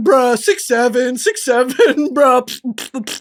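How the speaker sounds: put-on irritating bro babble with slow, annoying noises. Showing viewers the annoying stim bits they are used to: imitating her own annoying bit. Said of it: "You're used to my level of annoying".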